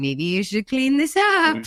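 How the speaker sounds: silly, playful little voice, high and sing-song. Speaker shows how they make a game of being mad, funny little voice. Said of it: "we'll do like a funny little voice".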